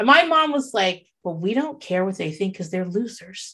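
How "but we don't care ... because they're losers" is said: straight-faced, even, calm, soft, low deadpan delivery. The speaker quotes what their mom said: mimicking a calm, straight-faced voice. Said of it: "she said that shit straight faced, calm voice".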